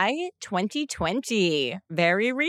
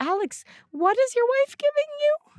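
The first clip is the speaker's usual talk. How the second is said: very high, really nice, sweet mom voice. Speaker imagining Alex's mother reacting to the episode, imitating her really nice voice. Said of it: "In her like really nice voice".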